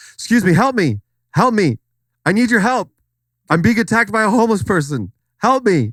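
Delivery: very high, play-acted, pretend cry. Pretending to be a stranger on the street begging for help: pretend plea for help. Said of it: "so let's pretend, like, I'm walking down the street".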